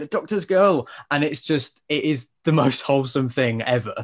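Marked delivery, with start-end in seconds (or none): 0.0-0.9 put-on high little-girl scream. Retelling a video of a little girl reacting to an announcement: imitating a little girl screaming. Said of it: "she's just screaming".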